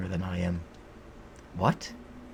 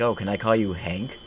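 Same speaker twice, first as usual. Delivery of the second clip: ordinary talk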